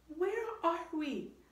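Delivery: high, halting, stammering voice. Jack, seeing a pteranodon, ferns and volcanoes around him, stammered. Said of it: "stammered Jack".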